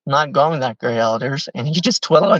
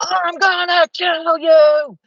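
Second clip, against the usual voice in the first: mock yelling, very high and very slow. Retelling how people yelled threats at them at night: imitating people yelling. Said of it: "people were just yelling".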